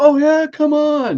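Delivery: very high, shrill, loud, drawn-out yell. Retelling a staged street fight, imitating a brother yelling back. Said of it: "Keith yells back".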